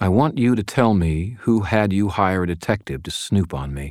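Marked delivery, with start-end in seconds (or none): none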